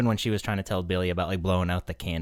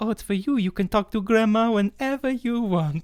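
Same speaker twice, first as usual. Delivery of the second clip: put-on old grandma's voice, pitched very high; 4 dB louder than usual. Telling how grandma gave Billy a telephone, imitating grandma's voice. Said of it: "not do her voice".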